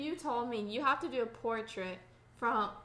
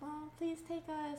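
soft, pleading, acted-out begging tone; 5 semitones higher, 6 dB quieter than usual. Recalling begging their mom to take them to the first Twilight, retelling begging. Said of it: "we begged my mom".

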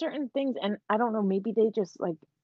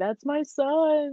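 put-on grief-stricken wail, high, son drawn out; 5 semitones higher than usual. Recalling a scene where a father screams about his son, imitating a scream. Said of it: "screaming at the end".

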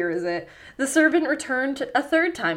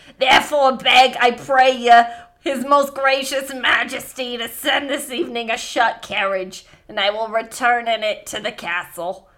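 put-on loud, raspy, crone-like old woman voice; 6 dB louder than usual. Reading a story about a king aloud, voicing a character's line in a put-on character voice. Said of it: "that's the voice now".

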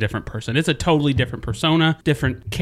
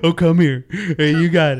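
put-on baby-talk voice, much higher; 4 semitones higher, 3 dB louder than usual. Showing how they talk to their animals, baby voice for pets. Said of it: "kind of like that kind of voice".

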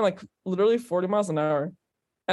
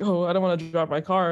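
put-on scared, frightened voice. Retelling how Darren reacted to a huge puddle: imitating scared Darren. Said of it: "he was, like, scared".

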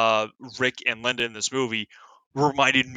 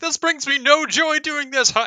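mock words forced through manic laughter, very high pitch; 3 dB louder than usual. Retelling a movie scene of stomping on phones: imitating laughing like a madman. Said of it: "he's just laughing like a madman".

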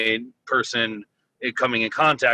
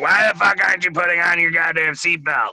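pitched-up, harsh scolding tone; 6 semitones higher than usual. Imitating Leah reacting to no seatbelt: imitating Leah scolding. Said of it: "before Leah listens to this and is like".

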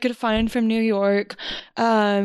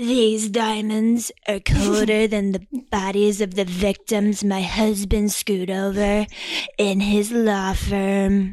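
nasally, deep put-on voice. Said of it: "That's my [name] impression".

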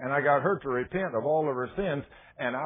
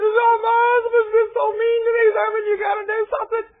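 put-on shrill, very high, very loud crying wail; 11 dB louder than usual. Retelling how a woman ran in crying: imitating someone crying. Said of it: "And she's crying".

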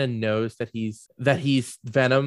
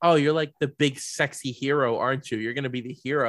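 normal talking voice

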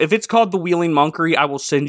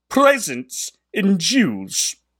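put-on British English accent, pitched higher; 5 semitones higher than usual. Reading a passage aloud a second time: English accent. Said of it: "try that again with an English accent".

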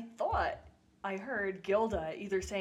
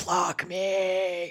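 very loud, very low booming demonic voice; 9 dB louder than usual. Retelling her bit as a chicken possessed by the devil, really low demonic chicken voice. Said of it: "went to a really low register and was like".

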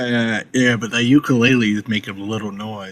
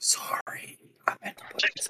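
very quiet, hushed whisper. Playing a character in a tabletop game, answering an ogre who heard a sound: whisper. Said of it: "Dapper would whisper".

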